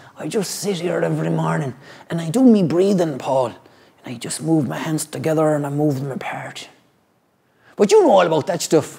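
salty pirate-style put-on voice. Retelling what the old man next door said: imitating a neighbour as a pirate. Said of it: "I made him sound like a pirate".

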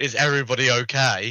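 loud town-crier style call-out. Planning to check on all the town's locals: shouting at top of lungs. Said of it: "shouting at the top of my lungs".

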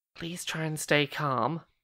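whispered words. In a tabletop game, a player's character speaks to her, whispering. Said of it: "I just want to whisper to her".

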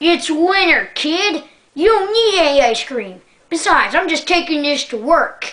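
high-pitched acted yell. Retelling chasing an ice cream truck, act out the driver yelling back. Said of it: "And he yells back".

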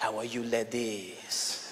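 put-on sexy, low, slow drawl in a French accent. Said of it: "You speak with a French accent".

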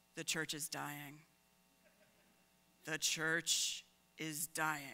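low, mournful, very sad lament. Speaker imitates a church member who keeps lamenting; mock-sad voice. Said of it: "with a shake of their head and a very sad voice".

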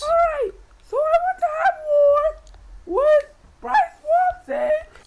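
voice cracking. Making an announcement in a video: voice crack. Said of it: "that voice crack".

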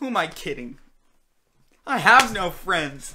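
freaking out. Speaking to the guys watching, freaking out. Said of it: "Sorry for freaking out there".

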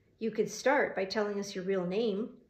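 ordinary delivery, nothing marked

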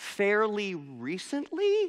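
unsure delivery, pitch lifted at end, rising tone. Retelling own past answer to a question: said like a question. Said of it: "I said it like a question".

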